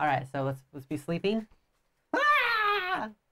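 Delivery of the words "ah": long, drawn-out, very high-pitched yell. Role playing a character waking up from sleep: yelling as a character. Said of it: "why are you yelling?".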